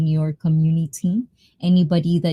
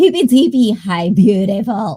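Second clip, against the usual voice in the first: loud, put-on witchy voice; 4 semitones higher, 5 dB louder than usual. Greeting viewers on a Halloween stream, trying a witchy voice. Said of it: "I'm trying to find my witchy voice".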